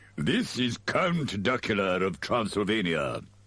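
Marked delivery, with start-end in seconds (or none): none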